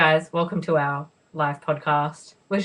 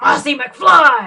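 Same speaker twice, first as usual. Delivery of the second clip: put-on eccentric scientist voice, higher and louder; 8 semitones higher, 9 dB louder than usual. Retelling what Christopher Lloyd said at a convention: imitating Christopher Lloyd. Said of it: "And then Christopher Lloyd said".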